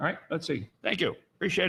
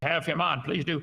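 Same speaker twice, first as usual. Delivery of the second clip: normal talking voice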